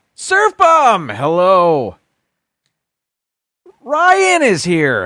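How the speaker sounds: bouncy, too high, loud, swooping sing-song. A host greets people by name while scrolling, voice getting too high. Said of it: "my voice getting too high".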